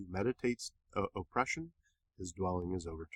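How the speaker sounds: emphatic delivery with pauses, pause before "oppression".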